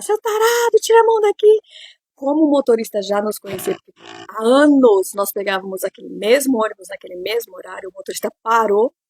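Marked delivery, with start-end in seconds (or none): 0.0-1.6 very high, shrill, loud screaming. Retelling how you yelled at a man on the bus, retelling a yell. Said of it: "Eu comecei a gritar".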